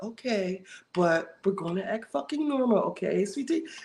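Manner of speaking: condescending, patronizing, talking-down tone. Retelling a reunion scene, kneeling before someone: imitating talking down to a patient. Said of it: "the tone of it".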